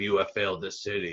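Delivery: dead-level, low, gravelly monotone with no inflection. Discussing Stephen Amell's acting challenge, imitating the Arrow's flat gravelly monotone. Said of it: "very flat, monotone, gravelly".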